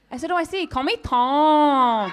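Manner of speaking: put-on Chinese accent. Repeating a man's name back to him, put-on Chinese accent. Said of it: "I added a Chinese accent to it".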